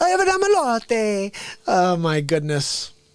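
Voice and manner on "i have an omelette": put-on thick Italian accent, high woman's voice. Doing the italian lady who cut the omelet line: imitating an italian lady. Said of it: "do the Italian lady".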